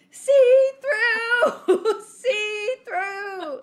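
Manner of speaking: very loud, very high, very slow, shrill drawn-out scream. Retelling how a kid yelled across the beach: imitating someone screaming. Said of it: "Nate starts screaming".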